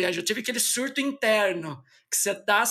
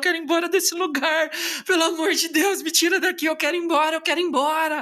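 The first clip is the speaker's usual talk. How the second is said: put-on crying, high, desperate, tearful pleading tone; 6 semitones higher, 3 dB louder than usual. Recalling calling mom during a college trip, begging to leave: imitating own past crying. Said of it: "eu ligava chorando para minha mãe e falava".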